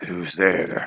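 hoarse, rasping, low voice. As the listeners start to go in, an unseen voice calls out; low raspy voice. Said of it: "you hear a low and raspy voice say".

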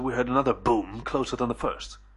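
ordinary delivery, nothing marked

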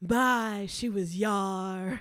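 booming, very slow, every word stretched out. Retelling a favorite line from an old yacht movie: Katharine Hepburn voice. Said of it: "Katharine Hepburn goes".

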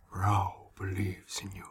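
hushed character voice, softly. Player swooping behind Mayhem as the group exits, Rao voice. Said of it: "the the Rao voice I've been using".

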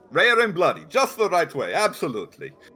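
put-on sketchy Russian accent. Ordering a vampire steak, [name] says how he likes it: vaguely Russian accent. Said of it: "I am using a vaguely Russian accent".

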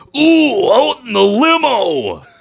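very high, slow, loud wrestler drawl, lingering on "limo". Retelling what the Macho Man said when asked for Slim Jims: imitating Macho Man Randy Savage. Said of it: "he looks down at me and he goes".

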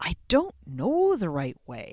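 hesitant, uncertain, self-doubting tone. Showing how a nervous new coach's thoughts sound: full of self-doubt. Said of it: "Do you hear that self-doubt".

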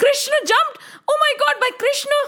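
mock frantic, very high, rushed panicked shout. Voicing Yashoda hearing Krishna jumped into the river: Yashoda shouting. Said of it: "Yashoda shout".

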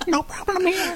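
very high, odd, squeaky squirrel-like critter voice. A squirrel answers the pest control phone, weird squirrel accent. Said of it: "what a weird squirrel accent".

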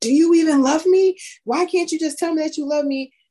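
shrill, very high, hard yelling. Retelling a daughter yelling at her father on a call: imitating a daughter yelling. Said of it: "she was just yelling at him".

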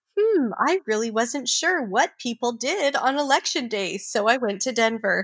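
heavy syrupy sarcasm, swooping sing-song. Retelling what she said in her speech, imitating dripping sarcasm. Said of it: "you can just hear the sarcasm dripping".

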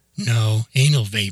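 ordinary delivery

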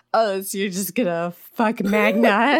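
drunken, taunting put-on voice. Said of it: "makes some drunken comment".

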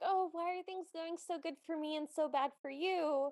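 put-on, very sad voice. Retelling a story, acting out Cindy's reply, imitating Cindy sounding very sad. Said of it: "Then Cindy very sadly goes like".

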